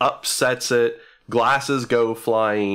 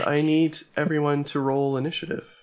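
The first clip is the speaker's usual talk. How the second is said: ordinary delivery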